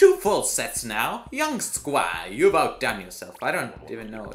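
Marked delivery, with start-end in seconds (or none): 0.0-3.4 failed, fake British accent with swooping pitch. Reacting to a game milestone, speaker addresses the squad in a failed British accent. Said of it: "That was supposed to be a British accent".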